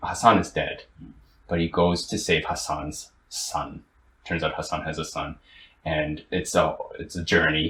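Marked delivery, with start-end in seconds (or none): none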